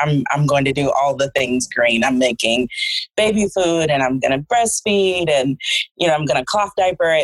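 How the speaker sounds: ordinary talk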